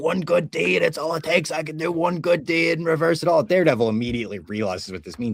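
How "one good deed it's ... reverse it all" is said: put-on, full-on, high, screaming outburst. Retelling a show scene where a man holds his neighbor hostage: imitating a scream. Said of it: "He's screaming".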